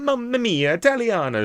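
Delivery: very high, loud, over-the-top exaggerated Italian accent.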